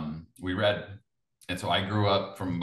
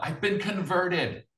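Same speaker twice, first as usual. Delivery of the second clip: very high, shouted called-out yell; 11 semitones higher than usual. Retelling finding a baptism certificate in an old box, imitating own past yell. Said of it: "I yelled out".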